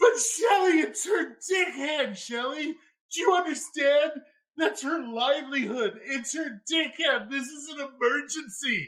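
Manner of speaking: very high voice breaking into laughter. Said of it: "I'm laughing so freaking hard".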